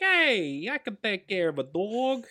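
put-on heavy New York accent, laid on. Recounting a scene, the speaker quotes the abducted kid: thick New York accent. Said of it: "Did you like that kid's New York accent".

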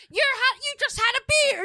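very high, mock screaming, shrieking woman voice.

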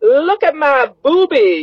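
acted-out very high, drawn-out child's yell, full volume. Retelling how a child yelled in a doctor's office: imitating a child yelling. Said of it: "just yells at the top of her voice".

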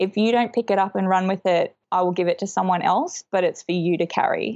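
ordinary talk, nothing marked

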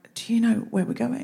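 quick, hushed half-whisper under the breath. Retelling leading a crowd with a sign, half-whispering to a companion. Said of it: "I whispered to Anna".

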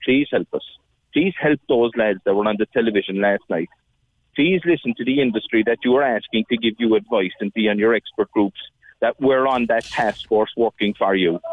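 ordinary talk

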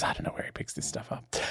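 very quiet, hushed, whispered aside. Recounting a scene where one Doctor whispers to another: retelling a whisper. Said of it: "10 whispers to the War Doctor".

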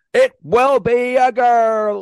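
loud, drawn-out screaming ring announcer hype. Mocking a stadium announcer's gender reveal, imitating a screaming WWE-style announcer. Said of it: "He's screaming".

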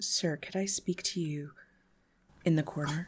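quiet, low, hushed voice under the breath. Voicing a maitre d' pulling a guest aside: hushed tone. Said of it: "says in a hushed tone".

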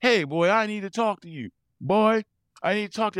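play-acted loud obnoxious holler, very high-pitched. Retelling a phone call from their father after ordering him a lawnmower: imitating dad's loud obnoxious call. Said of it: "I get this like just loud call and obnoxious".

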